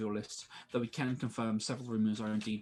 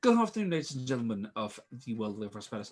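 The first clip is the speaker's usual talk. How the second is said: put-on, surprisingly proper and formal auctioneer voice; 3 dB louder than usual. Narrating a kobold addressing the auction crowd, surprisingly formal voice. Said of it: "in a surprisingly formal voice".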